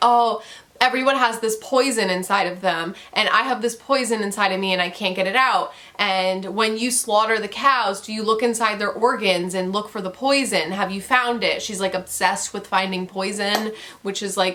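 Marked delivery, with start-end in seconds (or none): none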